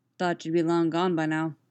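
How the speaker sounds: ordinary delivery, nothing marked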